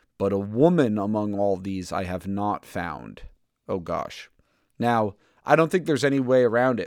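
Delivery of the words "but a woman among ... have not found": plain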